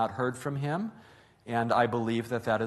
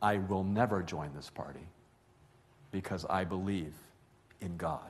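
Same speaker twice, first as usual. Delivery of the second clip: mock-calm voice, quieter and lower; 5 semitones lower, 7 dB quieter than usual. Speaker retells a Seventh-day Adventist woman's answer about joining a party, retelling a calm reply. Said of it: "able to say very calmly".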